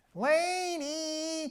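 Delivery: very high, tight-throated, drawn-out call, "lady" stretched high. Showing famous voices as examples: Jerry Lewis voice. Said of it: "Jerry Lewis".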